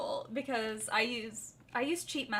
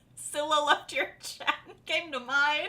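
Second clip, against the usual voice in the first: loud cackling laugh through the words. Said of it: "I'm cackling again".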